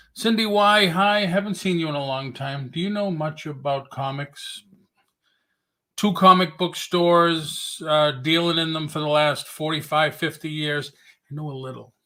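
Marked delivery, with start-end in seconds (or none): 11.3-11.9 dry, sardonic, tongue-in-cheek understated tone. Answering whether one knows much about comics: sarcastic. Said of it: "Sorry for being sarcastic".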